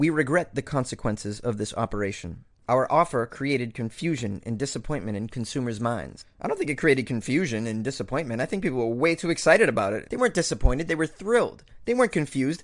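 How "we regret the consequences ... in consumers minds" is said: ordinary talk, nothing marked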